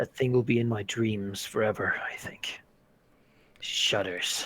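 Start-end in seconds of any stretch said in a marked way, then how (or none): 0.0-1.9 said in a low voice. As the island fades behind them, she speaks to Artemisia in a low voice. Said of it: "She will say in a low voice".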